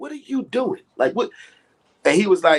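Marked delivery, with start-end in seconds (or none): 0.0-1.3 angry, confrontational outburst with raised pitch. Retelling walking up to someone and confronting him: retelling an angry outburst. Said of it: "I was so mad".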